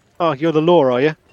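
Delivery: ingratiating, smiling, friendly guard voice. Voicing a main guard who smiles ingratiatingly: ingratiating friendly guard voice. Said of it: "he goes".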